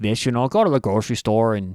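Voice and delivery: put-on Minnesota accent. Talking about Wisconsin's defense, the speaker demonstrates: Minnesota accent. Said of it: "i can do a nice minnesota accent".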